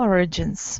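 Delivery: origins with stress on first syllable or. Correcting a learner's pronunciation: stress on or in origins. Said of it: "stress is on the first syllable".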